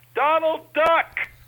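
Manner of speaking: high-pitched, slow, loud yell. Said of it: "one of them is gonna have to stand up and yell".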